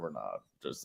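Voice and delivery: put-on gruff coach voice. Mocking the Masters organizers' attitude in a Belichick voice. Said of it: "I'm doing, like, the Belichick voice with it".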